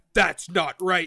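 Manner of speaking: put-on rough, gruff voice. Retelling a voice heard in a place meant to be empty, gruff voice. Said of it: "you hear a gruff voice being like".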